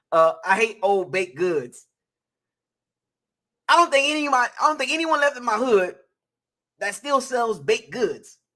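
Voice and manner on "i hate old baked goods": dry, mocking, put-on sarcastic reading. Reading a viewer's super chat aloud: put-on sarcastic reading. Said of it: "in a sarcastic way".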